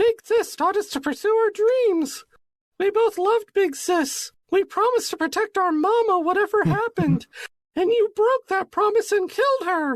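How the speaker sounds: put-on very high little kid voice, pitched way up. Narrating a scene, [name] turns to the party and speaks, in a little kid voice. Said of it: "That's my little kid voice".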